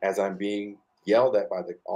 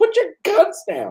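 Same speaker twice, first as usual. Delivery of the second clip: very loud, very high, barked yell; 9 dB louder than usual. Retelling how the sheriff ordered officers: imitating someone yelling. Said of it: "he starts yelling".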